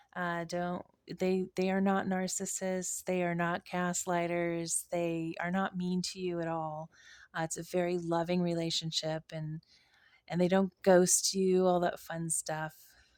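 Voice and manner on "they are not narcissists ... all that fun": ordinary talk, nothing marked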